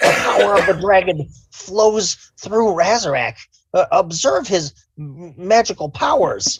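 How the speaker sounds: loud, very high creature voice. In a game, a kobold speaks after the trough water is purified; kobold character voice. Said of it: "I am a kobold. / [name] goes up and cups some water in his hand and drinks it. / I will test it for you, my lord".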